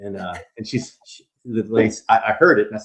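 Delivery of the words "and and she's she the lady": ordinary delivery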